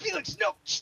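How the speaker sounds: very high, urgent hushing.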